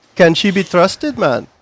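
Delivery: put-on spoken in an Indian accent. Among laughing friends, doing a bit in an indian accent. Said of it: "that's more Indian".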